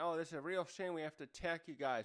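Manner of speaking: ordinary talk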